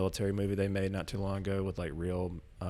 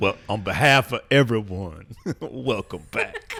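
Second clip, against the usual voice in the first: very loud, very slow fake Southern drawl; 2 semitones higher, 10 dB louder than usual. Welcoming someone back on behalf of everyone: put-on Southern accent. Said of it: "like a Southern accent".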